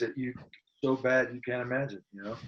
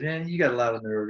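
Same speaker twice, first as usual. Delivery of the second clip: plain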